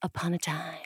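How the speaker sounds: hushed, unvoiced storyteller whisper.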